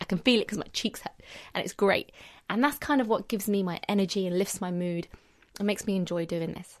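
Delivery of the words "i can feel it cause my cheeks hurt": normal talking voice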